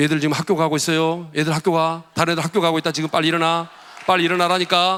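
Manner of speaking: acted-out rising intonation. Act out trying again to wake children who will not get up, acting out rising intonation. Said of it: "그러면 이제 억양이 높아지죠".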